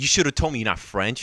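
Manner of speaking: put-on angry female voice. Retelling what a woman said after she turned around, imitating an angry woman. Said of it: "she turns around really angry".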